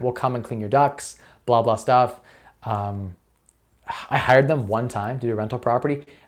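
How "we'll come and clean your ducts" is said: put-on thick Indian accent. Imitating duct cleaning callers offering their service: imitating a thick indian accent. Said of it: "Indian guys calling you with, like, a really thick accent".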